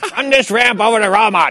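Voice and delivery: very bad fake Chinese accent. Repeating the line when asked, in the worst Chinese accent. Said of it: "That's the worst Chinese accent you're going to hear all night".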